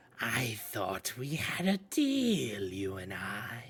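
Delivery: soft, eerie, otherworldly voice. In a role-playing game, a presence speaks straight into a character's mind: voice permeating your brain. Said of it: "voice that just kind of permeates your brain".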